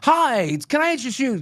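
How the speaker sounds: eager, very high, excited pitchman voice. Coaching Rasta to be more aggressive, showing an excited pitchman. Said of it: "like be excited".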